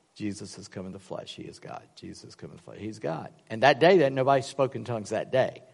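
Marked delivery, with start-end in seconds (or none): 0.1-3.3 mock muttering under breath, much quieter, lower pitch. Recalling a visit to a church, he repeats what he kept muttering under his breath. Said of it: "under my breath".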